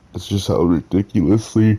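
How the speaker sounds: mid-yawn. Speaker discussing a character's growing arc, yawning. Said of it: "I apologize for yawning".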